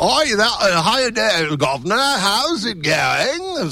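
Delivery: high, slow put-on English accent.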